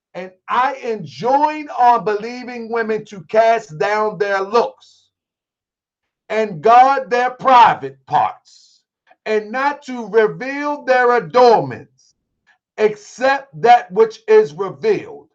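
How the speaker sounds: slow, deliberate, measured reading, each phrase weighed. A speaker reads a Quran verse aloud to listeners: reading slowly. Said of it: "And I'll read it slow".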